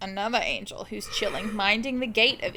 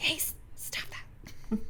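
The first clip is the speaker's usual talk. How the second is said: very quiet whisper, under the breath; 6 semitones higher, 9 dB quieter than usual. Acting out a figure trying not to wake the sleepers, whispering. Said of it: "I imagine him whispering so as not".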